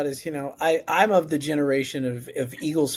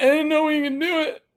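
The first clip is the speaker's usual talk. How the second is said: mock tearful, very high-pitched bawling sob; 13 semitones higher than usual. Retelling crying at a bar after a big win: imitating own past sobbing. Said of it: "bawling my eyes out".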